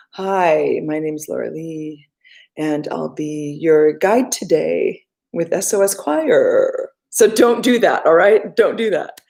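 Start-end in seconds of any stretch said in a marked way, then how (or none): 0.1-6.9 low, slow, creaky vocal fry. Showing singers once more the voice habit they should avoid, in vocal fry. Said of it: "I'll do it one more time just so you know".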